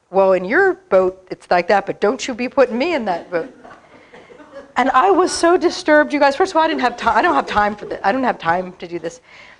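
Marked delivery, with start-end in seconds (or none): 0.1-3.5 mock irritated, angry, indignant tone. Telling how the person next to her snapped back: retelling an angry retort. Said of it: "the person next to her got angry and said".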